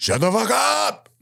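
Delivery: very high, rasping, creaky, drawn-out slow shout. Retelling how Dumbledore quiets angry kids: imitating Dumbledore shouting. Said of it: "Dumbledore pops up like".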